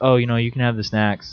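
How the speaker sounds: ordinary delivery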